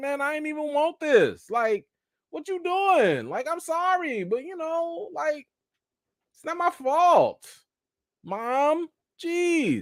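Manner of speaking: very high-pitched, whiny blubbering cry. Retelling a scene where Aegon answers his mother: imitating Aegon crying. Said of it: "Aegon over here crying like".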